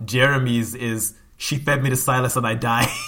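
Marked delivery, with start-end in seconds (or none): none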